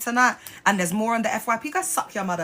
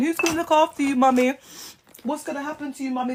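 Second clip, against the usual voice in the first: put-on tearful, pleading child voice, higher; 4 semitones higher than usual.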